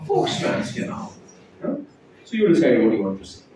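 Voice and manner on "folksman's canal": put-on whispered, breathy, cool South Bombay accent. Mimicking how South Bombay people say a medical term, South Bombay accent. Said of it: "But the Sobo will call it as what?".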